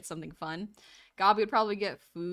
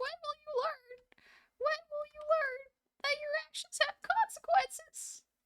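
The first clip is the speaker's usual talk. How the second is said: put-on very high voice cracking like a kid's; 3 dB quieter than usual. The speaker repeats a kid's line as a bit, mimicking the kid's voice crack. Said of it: "to mimic a voice crack".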